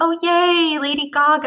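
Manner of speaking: very fake cheer, drawn out and high-pitched. Retelling how someone reacted when gaga came on to perform: imitating a fake cheer. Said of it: "And it's very fake".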